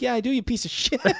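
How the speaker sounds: very high put-on pet voice. A dad acts out Finn's answers when he comes home: voicing Finn. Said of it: "[name] does this voice for Finn".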